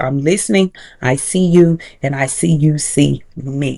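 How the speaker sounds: usual speaking voice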